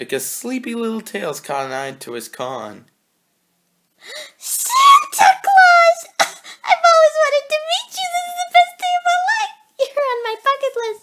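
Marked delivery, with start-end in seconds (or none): 4.4-11.0 very high, overjoyed, happy exclaiming. Narrator voicing Tails after he wakes in a story, said happily. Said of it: "He said happily".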